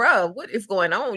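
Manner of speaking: a yell, delivered lightly. Retelling a reaction while watching a show: retelling own yell at screen. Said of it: "I was yelling at the screen like".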